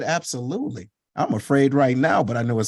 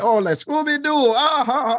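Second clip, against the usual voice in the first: put-on Ghanaian accent, pitched way up high; 12 semitones higher, 3 dB louder than usual. Retelling a father's teasing remark: imitating father's harsh Ghanaian accent. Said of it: "this harsh accent".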